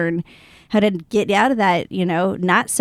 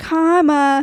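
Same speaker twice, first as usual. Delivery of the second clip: put-on mimicked toddler voice, higher; 8 semitones higher, 3 dB louder than usual. Retelling what a two-year-old said after her sister fell: imitating a little two-year-old voice. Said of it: "in her little two-year-old voice".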